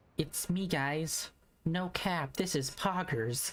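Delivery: imitated small girl's voice. Joking about a character speaking through the main character: imitating a small girl's voice. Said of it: "hear a small girl's voice come out of the main character".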